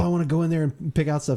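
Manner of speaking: ordinary talk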